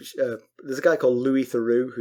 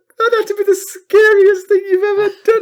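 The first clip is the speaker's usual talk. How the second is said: very loud, high, mock laughing speech; 10 dB louder than usual. Retelling how the agent spoke to him: imitating someone cracking up laughing. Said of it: "And she's cracking up laughing".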